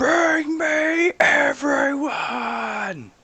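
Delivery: super angry, very high, loud shouting. Voicing a character who calls for everyone to be brought: Drax yelling super angry. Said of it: "super angry, and he's like".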